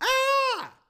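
very high, very loud mock fright scream.

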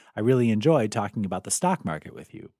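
ordinary talk, nothing marked

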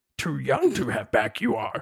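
swooping, sing-song, small, wise-sounding alien voice. Asked by the other speaker to do a Yoda, in a Yoda voice. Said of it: "can you do a Yoda saying".

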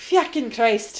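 weird, put-on Irish accent. An exclamation in conversation slipping into a weird Irish accent. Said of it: "I went like a weird Irish accent there".

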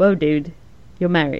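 ordinary talk, nothing marked

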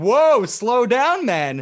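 mock tone, high, loud and slow.

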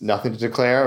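ordinary talk

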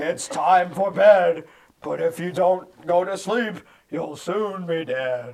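goofy rhyming character voice, loud, slow, sing-song.

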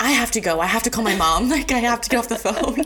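acted, high, tearful crying voice. Recalling a past phone call with a lady, retelling crying. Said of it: "I'm like crying".

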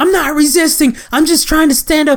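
very high-pitched screaming. Retelling an arrest, quoting the woman on the ground, imitating her screaming. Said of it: "she just keeps screaming".

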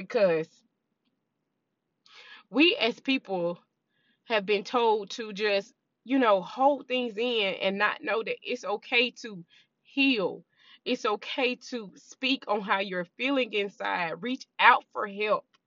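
speaking through welling tears, close to crying. Sharing a message meant to help someone who is struggling, tearing up. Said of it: "I'm tearing up thinking about it".

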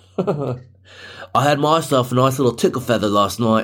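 fake, mock Australian accent. Joking about inventing buzzwords and answering someone puzzled, put-on Australian accent. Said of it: "are you Australian?".

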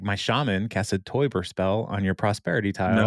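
ordinary delivery

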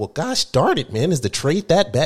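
swooping, stunned, baffled, mind-blown disbelief. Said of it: "he was so mind blown".

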